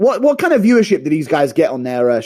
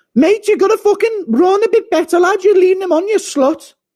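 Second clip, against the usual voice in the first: high-pitched scolding rant. Doing an impression of Till having a go at Izzy's dog: Till impression. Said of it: "Impression of Till having a go at Izzy's dog".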